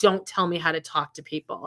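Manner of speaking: mock snippy, prickly, snapping bitchy tone. Retelling a lip-read red carpet clip: imitating Ryan Reynolds getting bitchy. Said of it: "Ryan got bitchy back at him".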